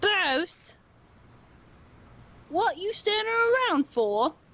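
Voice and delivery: very high, clearly put-on voice. Recounting voices heard, one calling to bruce: high-pitched put-on voice. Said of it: "you hear the higher pitched voice go".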